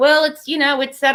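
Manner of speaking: dry, sarcastic tone. Retelling a reply to people who don't understand the laws: imitating own sarcastic reply. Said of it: "I'm being sarcastic".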